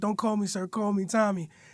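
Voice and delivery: put-on nonchalant voice. Retelling Tommy refusing to be called sir, nonchalant imitation of Tommy. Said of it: "He got a nonchalant way of speaking".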